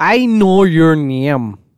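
slow, put-on Irish accent. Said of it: "You were just doing it".

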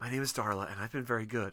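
soft, put-on stage whisper. Retelling a movie scene where Darla talks to Santa: imitating Darla's stage whisper. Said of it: "stage whispers".

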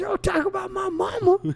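high-pitched, loud yell. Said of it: "the best part is when he says".

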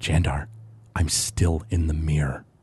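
hushed whisper that carries through. Voicing a character speaking from a cracked mirror: whispered Alistair voice. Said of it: "you hear a whispered voice come from the piece of the mirror".

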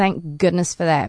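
ordinary delivery

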